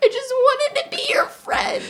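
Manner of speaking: very high, tearful sobbing voice, breaking down. Retelling being stung by a wasp while letting it go: retelling breaking down crying. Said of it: "I'm breaking down crying".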